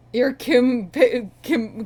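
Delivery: loud high stutter. Trying to say another man's full name, stuttering. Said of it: "I'm stuttering".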